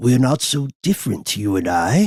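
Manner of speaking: put-on British accent, big creature voice. Describing a Bigfoot-like creature from a myth, Sasquatch with a British accent. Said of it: "says the Sasquatch with an inexplicable British accent".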